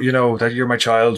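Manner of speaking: ordinary talk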